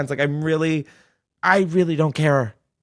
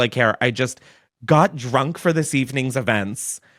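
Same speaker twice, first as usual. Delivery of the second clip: ordinary talk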